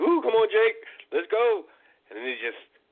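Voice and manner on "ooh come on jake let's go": very high, slow, drawn-out cheer. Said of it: "he's just talking, like".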